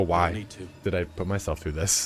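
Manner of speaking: regretful, self-pitying voice. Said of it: "you sit on the ground and go".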